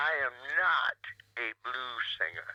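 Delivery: the word not stressed most heavily. Speaker announces emphasizing the word not, then says it with stress on not. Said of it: "I emphasize the word not".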